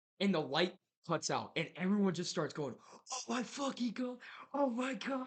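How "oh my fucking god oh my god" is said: play-acted very high, drawn-out frightened screaming. Retelling a ghost story, speaker imitates everyone screaming when the light cuts out. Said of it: "Like everyone's screaming".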